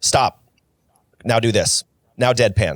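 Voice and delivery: mimicked curt commanding tone. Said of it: "And just command".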